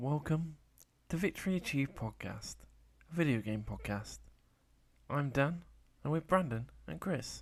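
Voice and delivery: soft, gentle, quiet library-hushed voice. Podcast host opening the show and introducing his co-hosts, gentle. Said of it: "You were so gentle when you were saying that".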